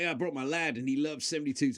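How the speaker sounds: put-on American accent, fan-like voice. Imitating a fan at a stadium gig: put-on American accent. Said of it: "why am I talking American accents?".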